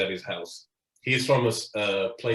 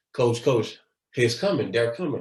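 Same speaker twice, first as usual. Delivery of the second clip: plain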